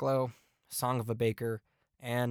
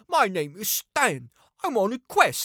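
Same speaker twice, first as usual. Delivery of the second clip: put-on horrible, swooping, sing-song Cockney accent; 10 semitones higher, 8 dB louder than usual. Reviewing an album, mocking a spoken interlude in a horrible cockney accent. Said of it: "that horrible Cockney accent with someone saying".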